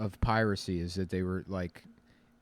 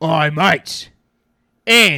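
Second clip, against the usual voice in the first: rowdy, very loud, high pirate holler; 8 semitones higher, 14 dB louder than usual. Acting out pirates building morale on a ship: imitating a pirate crewman. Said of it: "one guy would go".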